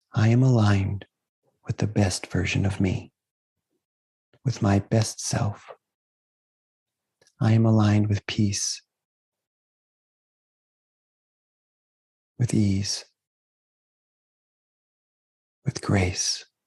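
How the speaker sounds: whispering softly. Leading an affirmation said out loud along with listeners: soft whisper. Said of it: "just in a soft whisper".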